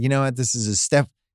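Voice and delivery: ordinary delivery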